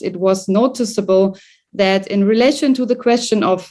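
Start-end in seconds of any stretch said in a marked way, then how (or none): none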